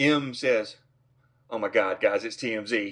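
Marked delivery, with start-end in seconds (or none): none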